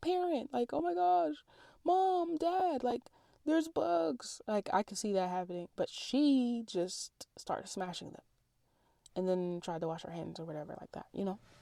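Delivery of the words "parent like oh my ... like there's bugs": put-on very high, scared, drawn-out child's scream. Imagining a kid finding bugs in the shower: imitating a screaming kid. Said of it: "I would see a kid screaming and be like".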